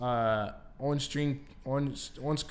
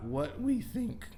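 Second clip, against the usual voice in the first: voice cracking; 2 semitones higher, 3 dB quieter than usual. Switching gears to a new discussion topic, voice cracking. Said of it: "my voice is cracking like I'm sixteen".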